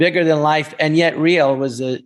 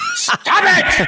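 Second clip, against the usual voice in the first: play-acted, very high, held-in, mild dad yell. Explaining he picked up yelling from his father, imitating his father yelling. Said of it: "he would yell a lot".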